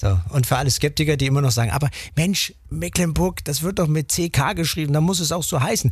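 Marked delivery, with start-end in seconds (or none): none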